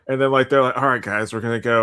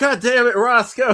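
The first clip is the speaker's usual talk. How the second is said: very high, slow, fed-up, annoyed outburst; 12 semitones higher than usual. Retelling a video where teammates react to a ruined plan: imitating angry gamers. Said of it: "get, like, pissed off".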